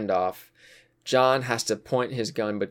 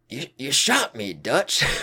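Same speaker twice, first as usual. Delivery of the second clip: put-on sing-song character voice with swooping pitch; 4 semitones higher, 3 dB louder than usual. Retelling a game scene where a character gets shot: Micah impression. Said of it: "I think I can do a good Micah impression".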